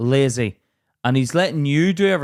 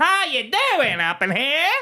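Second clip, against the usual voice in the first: put-on rodeo cowboy voice, higher; 12 semitones higher than usual. Mocking the other speaker's greeting: rodeo cowboy voice. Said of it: "You sound like some rodeo cowboy".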